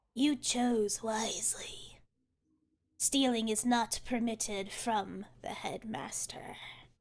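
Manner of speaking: two rasping voices speaking as one in unison. A game master voices two figures speaking to all the players, raspy voices in unison. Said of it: "you hear these sort of like raspy voices".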